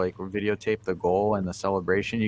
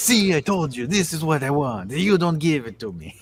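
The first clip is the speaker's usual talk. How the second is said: put-on loud, venting delivery in a Polish accent; 8 semitones higher, 5 dB louder than usual. Acting out someone's pent-up frustration to a co-speaker, as Milik in a Polish accent. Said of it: "your Polish accent?".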